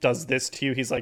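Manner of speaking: ordinary delivery, nothing marked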